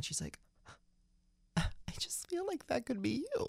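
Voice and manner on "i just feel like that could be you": crying, with words pitched very high. Retelling what a crying mom said: imitating mom crying. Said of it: "my mom turned to me crying".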